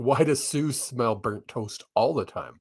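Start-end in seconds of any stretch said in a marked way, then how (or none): none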